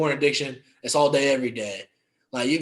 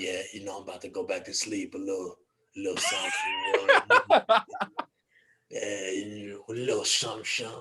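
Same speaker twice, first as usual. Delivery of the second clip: low, drowsy, put-on New York accent; 5 semitones lower, 4 dB quieter than usual. Showing the sleepy voice used when calling people after waking, put-on sleepy New York voice. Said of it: "my sleepy voice is from New York".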